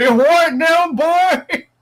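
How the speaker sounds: put-on loud, very high-pitched old country farmer voice. Picturing someone asked about putting high heels on his chicken, old boy in dungarees voice. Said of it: "some old boy in his dungarees".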